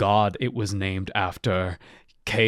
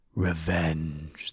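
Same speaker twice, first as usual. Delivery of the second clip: whisper, much quieter and lower; 4 semitones lower, 7 dB quieter than usual. Narrator reading a fantasy story, voicing a blade that speaks to the hero, whispering. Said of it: "the blade seemed to whisper".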